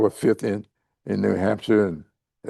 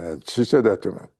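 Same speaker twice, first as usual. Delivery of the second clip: ordinary delivery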